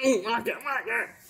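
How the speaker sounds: very quiet, muttered put-on character voice. Opening card packs, calling out a player's name: put-on Mister Krabs-like voice. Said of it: "when I do that voice, do, do I sound like, uh, Mister Krabs".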